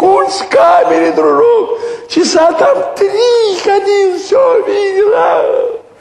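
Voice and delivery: lofty, very high-pitched, very slow, drawn-out voice. Retelling a man's words to someone across the street: high-pitched voice. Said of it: "высоко говорит".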